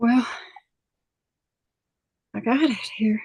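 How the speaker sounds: breathless, out-of-breath delivery. Apologizing for arriving late after rigging something up, out of breath. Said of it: "You sound like you're totally out of breath".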